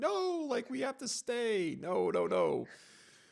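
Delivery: put-on shrill, very high, swooping screaming outburst. Describing an inner voice that insists on staying, retelling an inner scream. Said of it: "this guy up here is just screaming like".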